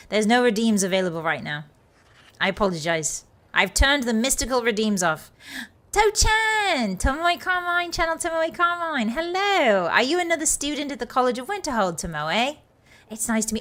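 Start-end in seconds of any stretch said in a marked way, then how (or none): 5.9-12.5 full-throated excited yelling, high-pitched and loud. A streamer greets a newly arrived viewer by name, yelling. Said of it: "sorry, I'm yelling".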